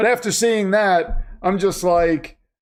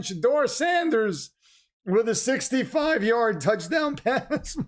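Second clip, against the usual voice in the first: voice breaking up on the words; 3 semitones higher, 7 dB quieter than usual. Broadcaster recapping a touchdown pass after a Jets game, voice cracking. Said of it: "My voice is cracking".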